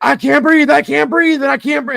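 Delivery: very high, panicked, frantic screaming. Retelling patients freaking out during hospital pickups: imitating someone yelling and screaming. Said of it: "yelling and screaming".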